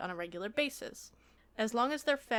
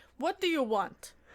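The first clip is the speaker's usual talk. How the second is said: loud, put-on Eastern European accent; 4 semitones higher, 5 dB louder than usual. Playing an evil vampire lord in a role-play, answering another player; Eastern European accent. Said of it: "I'm going for kind of an Eastern European thing".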